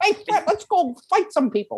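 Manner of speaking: put-on high, old-time 1930s Chicago grifter voice. Mimicking how another actor played Barney in a movie: 1930s Chicago grifter voice. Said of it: "He sounded like a grifter. Like, you'd see him in, like, 1930 Chicago".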